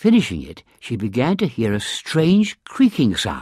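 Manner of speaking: ordinary delivery, nothing marked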